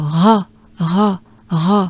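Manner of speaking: breathy French r sound. Showing a learner the breathy french r sound: french r with breath. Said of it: "it goes with the ra".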